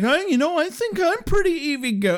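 put-on high-pitched girlish voice. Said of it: "Buffy's like".

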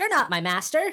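small, tiny robot voice. Voicing a tiny digging automaton describing his job: tiny automaton voice. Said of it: "he looks at you, he says".

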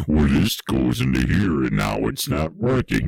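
strongly sarcastic voice. Retelling what people said while pulling cables from a heart: imitating sarcasm. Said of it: "they kind of get all sarcastic".

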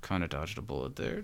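muttered under breath. Recapping an episode, quoting a character's remark: muttered under breath. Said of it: "he says really quietly under his breath".

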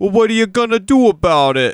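bad put-on New York accent, loud and terrible. Retelling an audience member's follow-up question, in a terrible New York accent. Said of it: "Somebody with a terrible New York accent".

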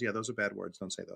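ordinary talk

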